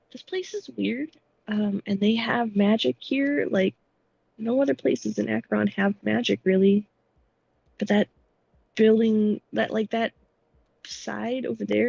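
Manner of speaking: whispering quietly. Voicing a character whispering to a companion about a strange place: quiet whisper. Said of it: "just very quietly whispers".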